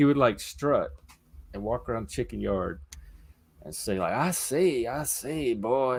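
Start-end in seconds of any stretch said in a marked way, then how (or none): 4.1-6.0 very slow, drawn-out, strutting cartoon rooster voice. Asked for a Foghorn Leghorn impression, trying one out: Foghorn Leghorn impression. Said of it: "That's Foghorn".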